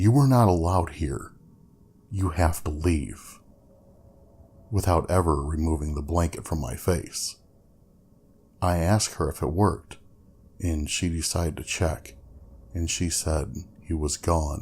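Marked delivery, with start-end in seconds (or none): 0.0-3.4 put-on bravest-possible voice. Retelling commanding a ghost to leave, hidden under a blanket: imitating own bravest voice. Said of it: "in my bravest possible voice".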